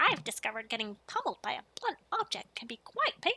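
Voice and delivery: cranky, irritable, grumpy gnome character voice. Practicing character voices before a stream, in an irritable gnome voice. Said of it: "My irritable one".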